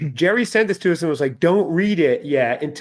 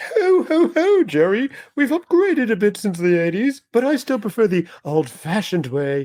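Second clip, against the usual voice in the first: put-on jolly character voice; 5 semitones higher than usual. Greeting podcast listeners as a guest from the North Pole: Santa Claus voice. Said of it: "I'm a Victorian Santa".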